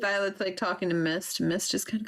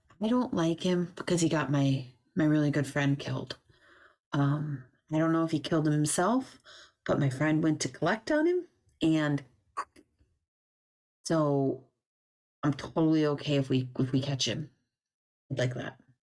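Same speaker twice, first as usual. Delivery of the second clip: whispering quietly; 4 semitones lower than usual. A character secretly speaks to Muse about a man, whispering. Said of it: "she whispers to to Muse".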